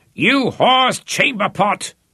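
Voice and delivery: bellowing roar, very high and loud. Running toward a man leaving the latrine, he insults him; roaring. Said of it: "roared Popeye as he ran".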